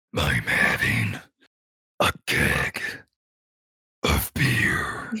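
very slow, drawn-out, spooky scary wolf voice. Answering what you're drinking tonight in a scary wolf voice. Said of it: "I'm not allowed to talk like that in the house".

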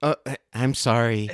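ordinary delivery

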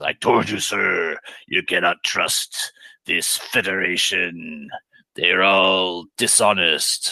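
very low pitch, dragged out. In a game, the Gorn aide objects to the turn of events: Slasarn the Gorn aide voice. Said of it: "So the Gorn aide, Slasarn. / He took exception to this turn of events. / "This is Officer Leader [name], speaking for [name], Captain Leader. The cruisers [name] and [name] are summoned off station. M".

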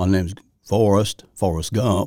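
slow, weak, off-form put-on movie character voice. Admitting the first try was weak, the speaker does a bad Forrest Gump impression. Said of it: "That was not my better impression of Forrest Gump".

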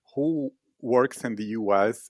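plain

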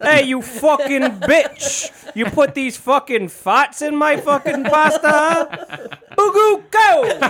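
brash, put-on comedian voice. Speaker acts out a diner complaining about his pasta, Andrew Dice Clay impression. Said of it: "doing Andrew Dice Clay impressions".

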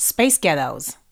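American accent, said briskly. Asked to say two words a bit quicker, in an American accent. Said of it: "can you say space ghettos in an American accent".

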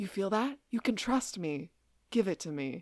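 mock, oddly sinister, totally evil-sounding delivery. Retelling a character handing over the Moonstone: imitating Lucy's evil line reading. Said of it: "in a really weird line reading where it seems like she's totally evil".

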